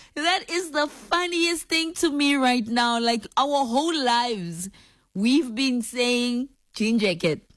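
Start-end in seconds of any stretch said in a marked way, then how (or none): 3.4-7.4 English with an Afrikaans accent. Speaker talks about what her family has always said: Afrikaans accent. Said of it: "I'm saying it in the Afrikaans accent".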